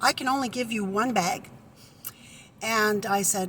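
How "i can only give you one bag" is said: ordinary delivery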